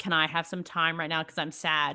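ordinary delivery

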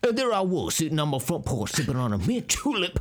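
put-on Louisiana French-style accent. Acting out a porch scene in Cajun style: Daniel Craig Knives Out voice. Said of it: "that's just Daniel Craig in Knives Out".

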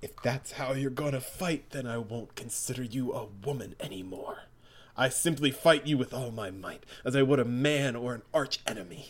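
stern, deadly serious, quiet, grave anger. Reading a comic fight, the fighter tells his female opponent off, serious and angry. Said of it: "but pure-hearted [name] won't even lift a finger. / We just get some exposition on Nam's backstory for some reason. Yeah, he's got a really serious backstory. Not played for comedy at all. [name]'s co".

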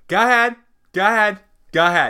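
put-on drawn-out New York accent. Imitating a guest on another podcast, in his New York accent: Michael Rappaport impression. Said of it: "he also says in his New York accent".

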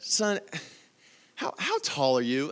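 put-on sweet old lady voice, slow and sing-song. Retelling what a passenger asked about height: imitating a sweet elderly lady. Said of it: "a really sweet elderly lady".

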